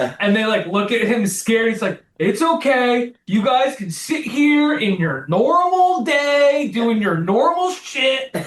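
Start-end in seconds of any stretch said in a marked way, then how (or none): 2.2-8.3 put-on drunk man's ranting voice, higher-pitched. Retelling a scene where he's completely hammered at the game: imitating drunk Mark ranting. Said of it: "he's completely hammered".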